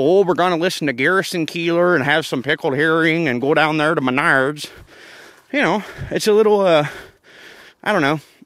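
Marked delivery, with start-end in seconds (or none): 0.0-4.7 put-on hokey, corny Midwestern accent. Comparing regional accents, the speaker mimics Midwesterners: hokey Midwestern accent. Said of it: "they sound a little hokey".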